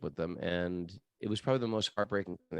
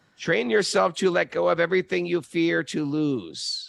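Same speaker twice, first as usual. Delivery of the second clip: very high, creaky, raspy character voice, loud; 10 semitones higher, 8 dB louder than usual. Quoting a line from Yoda, Yoda voice. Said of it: "That's my Yoda impression".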